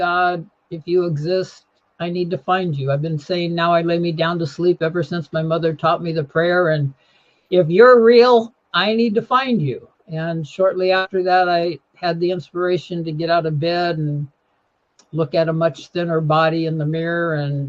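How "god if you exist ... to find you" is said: plain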